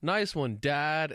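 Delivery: mock, really enthusiastic, eager, high cheer. Describing a dad coaching his daughter through a recording, retelling an enthusiastic line. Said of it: "he would say a line really enthusiastically".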